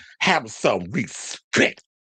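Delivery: respect over-enunciated, every single syllable hit. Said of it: "reminds me of [name] in the episode of Pose".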